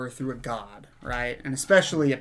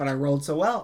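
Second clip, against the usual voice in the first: normal talking voice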